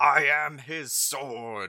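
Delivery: high, drawn-out angelic scream. Voicing the angel as a player's turn begins: angel screaming. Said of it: "you hear the angel just screaming out".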